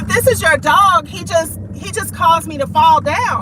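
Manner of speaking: upset yelling.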